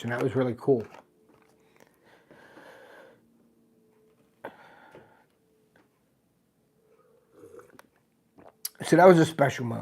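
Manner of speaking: choked-up voice, thick with feeling. Recalling a special moment when their dad handed them something, choked up. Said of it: "I'm just a little choked up with that story".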